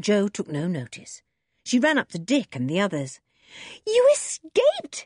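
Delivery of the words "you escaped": very high-pitched, sudden exclaimed cry. Jo ignores her uncle and runs up to Dick and the others, crying out. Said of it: "she cried".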